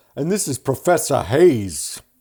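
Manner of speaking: loud, laid-on put-on New York accent. Showing that the mechanic in a scene is not from boston, imitating a new york accent. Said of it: "he's like".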